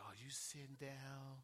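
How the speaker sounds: mock very quiet, sorrowful, hushed voice. Retelling a phone call with a good report: imitating Sister Mary's sad voice. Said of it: "had me in that sad voice".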